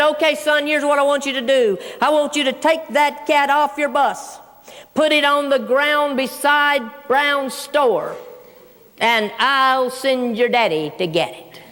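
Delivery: plain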